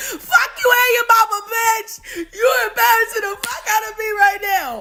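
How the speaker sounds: high, sobbing, tearful crying voice. Retelling how a leader reacted while hiding: imitating someone crying. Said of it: "in the hole crying like".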